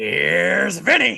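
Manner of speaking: rough, high, raspy announcer-style delivery. Answering a request to do Vince doing "Here's Johnny": Vince doing "Here's Johnny". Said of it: "can you do Vince doing an impression of "Here's Johnny"?".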